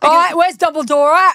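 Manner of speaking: bad, clumsy, put-on Cockney accent. Joking that the boy wizard should have been Cockney, bad Cockney Harry Potter. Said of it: "fucked up Cockney accent".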